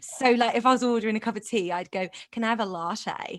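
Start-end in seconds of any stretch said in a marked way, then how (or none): 2.3-3.4 put-on accidentally slipped-in Australian accent. Retelling ordering drinks in a put-on Scouse accent: accidental Australian accent. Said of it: "That's Australian".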